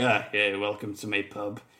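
low, gloomy, dour, grudging, unwilling Scottish voice. Retelling how the pub's owner greets people: imitating a dour Scottish man. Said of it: "the most dour Scottish man you've ever met".

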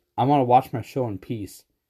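ordinary delivery

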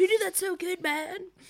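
very high surfer-dude voice. A speaker repeats people's praise in a surfer-dude voice. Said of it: "You sound like a fucking surfer from fucking Venice".

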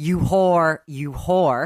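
harsh, abusive shouting. Telling a story about a man shouting at a woman to make her cry, acting out the shout. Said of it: "starts shouting".

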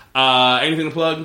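ordinary delivery

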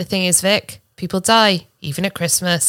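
put-on deadpan delivery. Quoting one of their favourite people, the speaker imitates deadpan delivery. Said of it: "and just deadpan".

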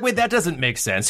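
ordinary talk

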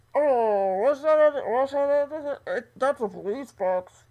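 muffled radio transmission sound through cupped hands. Retelling a scene, voicing a radio tower: muffled radio voice through cupped hands. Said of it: "that special effect you just did on your voice".

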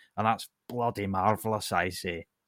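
put-on Scottish accent. Praising a Scottish explainer of spaceships: Scott Manley impression. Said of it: "That was Scott Manley".

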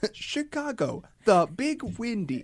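shrill, swooping robot voice. Teasing someone for sounding like a computer, the speaker imitates: Twitter bot voice. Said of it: "like a Twitter bot being like".

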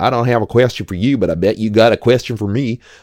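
put-on silly American accent. Describing a scene, speaker voices the man who stands up, Henry Cavill goofy American accent. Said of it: "goofy American accent Henry Cavill".

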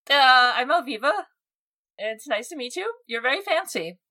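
awkward, nervous giggling. Voicing a character meeting someone new: awkward giggling. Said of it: "Awkward giggling".

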